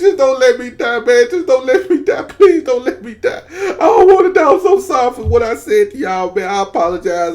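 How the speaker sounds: high, play-acted boo-hooing, pleading through tears. Retelling a crash, begging the others not to let him die: imitating his own crying plea. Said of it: "then I just bust out crying".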